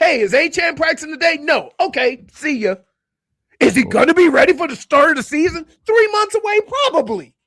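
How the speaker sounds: loud, very high, lashing-out angry rant. In a group discussion about football, angry ranting. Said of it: "Feels like you're lashing out".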